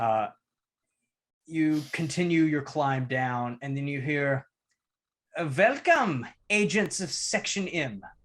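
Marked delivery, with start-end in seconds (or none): 5.6-8.0 put-on German accent, raised and swooping in pitch. A voice greets agents as they climb down, german accent. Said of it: "you hear it in a German dialect spoken in".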